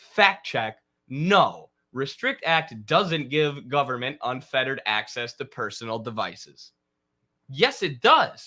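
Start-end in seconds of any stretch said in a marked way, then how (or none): 0.0-6.7 snooty, super condescending, talking-down tone. Reading a fact-check headline aloud, mock-condescending. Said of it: "have it be in a super condescending tone".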